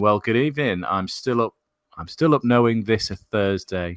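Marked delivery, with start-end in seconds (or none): none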